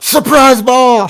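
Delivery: high, slow, very loud yelling.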